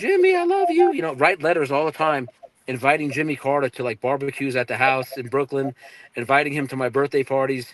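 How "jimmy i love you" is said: very high, sobbing, tearful voice. Retelling a mother's words to Jimmy Carter's pictures: imitating mother crying. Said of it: "she would cry".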